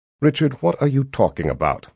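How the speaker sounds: ordinary delivery, nothing marked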